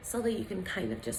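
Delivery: gentle sweet voice. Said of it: "build in the voice".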